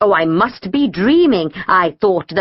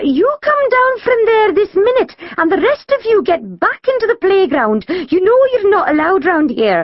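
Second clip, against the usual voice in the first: trembling, quavering, very high voice; 12 semitones higher than usual. A narrator reads the dinner lady's order to Kim, in a quavering voice. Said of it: "she said in a quavering voice".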